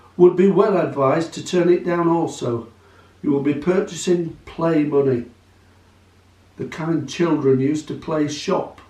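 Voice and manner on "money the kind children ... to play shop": plain reading voice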